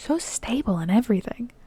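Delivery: amazed, astonished, barely audible whisper. Reading fiction aloud, a character whispers over a baby: astonished whisper. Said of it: "Batman faintly hears him whisper".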